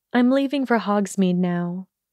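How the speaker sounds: ordinary delivery, nothing marked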